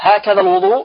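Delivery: normal talking voice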